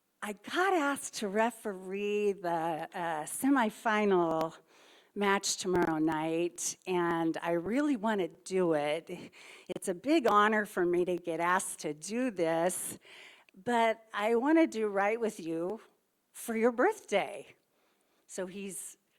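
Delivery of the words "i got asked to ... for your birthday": usual speaking voice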